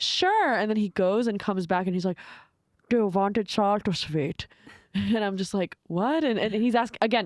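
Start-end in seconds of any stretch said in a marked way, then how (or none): 2.9-4.5 put-on heavy German accent, slower. Retelling what a man asked her about the gefilte fish, heavy german accent. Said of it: "with a heavy German accent".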